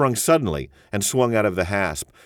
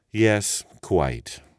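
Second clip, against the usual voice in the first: soft, quiet, disdainful and scornful tone. A narrator voices a man answering another man's remark, softly contemptuous. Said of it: "in his softly contemptuous voice".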